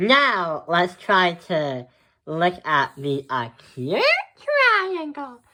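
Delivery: small, squeaky, sing-song voice, very high. Someone explaining triangle types moves on to the acute one, in a small voice. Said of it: "the reason why I'm saying in a small voice".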